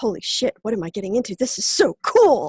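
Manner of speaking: thrilled, excited, swooping, awestruck outburst. Retelling own reaction to the herald's call: imitating own past excitement. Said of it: "I went all over goosebumps".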